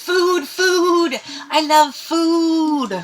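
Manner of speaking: shrill, slow cackling creature voice, "food" drawn out. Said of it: "He cackles and he goes".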